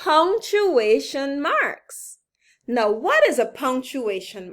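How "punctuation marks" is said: slow, stretched, careful word-by-word delivery. Teaching a long word so listeners can say it along: said slowly. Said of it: "I'll say it slowly so that you can say it with me".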